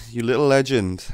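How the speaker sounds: normal talking voice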